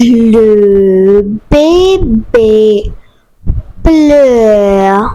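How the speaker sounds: speaking slowly. Saying a french practice sentence for learners to repeat: speaking slowly. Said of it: "I am going to say slowly".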